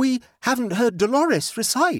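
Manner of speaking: desperate, very high, pitched way up. Narrator reads Rollo speaking to the group, desperate. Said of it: "said Rollo desperately".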